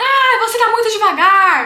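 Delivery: mock very loud, irritated, drawn-out angry yell. Talking about anger in traffic, the speaker acts out a driver, mock-angry. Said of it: "a gente fica com raiva de alguém".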